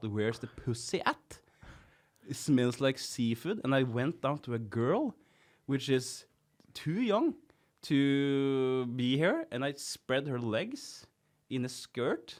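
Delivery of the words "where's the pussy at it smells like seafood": ordinary delivery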